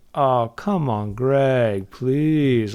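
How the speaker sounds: very slow delivery, every word drawn out. Retelling how an audiobook narrator quotes Tommy: Tommy Wiseau voice. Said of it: "the Tommy Wiseau voice".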